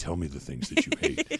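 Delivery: grave, solemn, unfriendly and hostile tone. Showing the wrong way to ask the question: solemn, hostile delivery. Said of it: "You can't say it like that".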